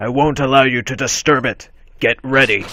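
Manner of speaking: deep put-on voice. Voicing Mesprit in a game playthrough, warning the player; deep Juggernaut voice. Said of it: "Gonna get this deep Juggernaut voice".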